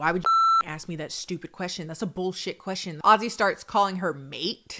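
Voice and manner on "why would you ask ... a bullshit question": incredibly condescending, swooping, talking-down tone. Retelling how a man answered a reasonable question: mock-condescending. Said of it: "Ozzy becomes incredibly condescending".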